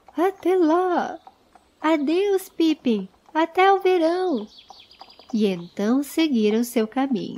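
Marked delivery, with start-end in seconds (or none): 0.2-4.5 joyful, cheerful, high, drawn-out shout. Bilbo and Frodo wave back to Pippin as they part, cheerful shouted farewell. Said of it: "com gritos de".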